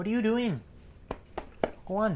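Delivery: irritated, annoyed, very high, hushed voice. Reacting to a goal while watching a hockey game, annoyed. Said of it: "You sound very annoyed".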